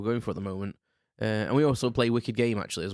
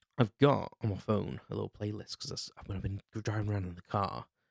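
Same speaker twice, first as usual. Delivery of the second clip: speaking in a whisper; 5 dB quieter than usual. Speaker about to name songs from a driving playlist, whispering. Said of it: "I don't know why I'm whispering".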